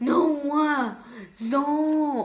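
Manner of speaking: halting, fumbling high voice. Showing the odd voice she slips into: Miranda style voice. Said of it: "kind of like the Miranda style voice".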